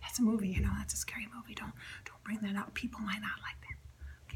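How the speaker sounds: soft, hushed, conspiratorial whisper.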